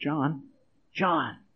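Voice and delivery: quiet, hushed voice.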